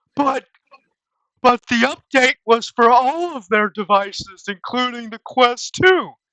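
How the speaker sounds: goofy cartoon voice, high and loud. Complaining about a headset update, the speaker switches into a Patrick Star voice. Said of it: "Let me put my Patrick Star voice on".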